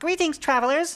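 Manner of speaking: very high-pitched fairy sprite voice. The lead sprite greets the Fellowship, in a high-pitched sprite voice. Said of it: "says the lead sprite in a high-pitched voice".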